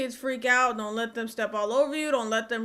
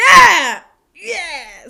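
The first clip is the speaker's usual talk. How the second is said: screaming, much louder; 6 semitones higher, 16 dB louder than usual. At a noisy public meeting, a person shouts in support, screaming. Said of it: "I don't mean to scream".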